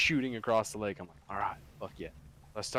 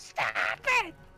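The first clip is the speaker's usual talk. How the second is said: mock screaming in a woman's voice; 2 semitones higher, 3 dB louder than usual. Retelling a fight at the water, imitating the lady who kept screaming. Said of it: "the lady's just screaming the whole fucking time".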